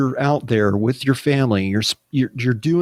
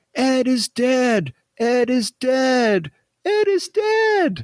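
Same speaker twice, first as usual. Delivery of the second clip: put-on very high, very slow, rising shrieking scream; 12 semitones higher than usual. Retelling a kid running into the hallways at night: imitating someone screaming. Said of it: "just screaming".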